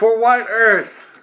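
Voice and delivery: very loud, shrill, yelled battle cry. Voicing another enemy in the fight: yelling a battle cry. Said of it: "Another one yells".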